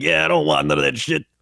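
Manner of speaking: wild, high, rough put-on goblin voice. Showing the voice used for a game character, in a wild goblin voice. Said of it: "mixture between like a generic goblin and like a like a wild goblin".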